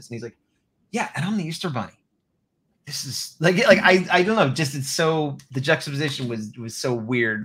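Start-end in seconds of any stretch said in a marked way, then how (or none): 0.9-1.9 dead-serious, grave, angry-sounding, no hint of joking. Retelling a character's line about being the Easter Bunny: imitating a serious delivery. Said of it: "he's still just as serious".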